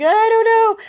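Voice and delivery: crying, high, loud, helpless wail.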